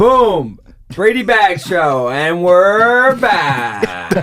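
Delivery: loud radio announcer voice, "back" drawn out. Host coming back on the show after a break, in a radio voice. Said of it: "You guys like my radio".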